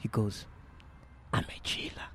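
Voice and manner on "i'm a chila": quieter, imitated whisper. Retelling what a priest said after the coffin left: imitating a whisper. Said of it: "he whispers to me".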